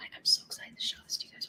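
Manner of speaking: hushed whisper. Showing viewers a secret design about to roll out, whispering. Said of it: "I don't know why I'm whispering".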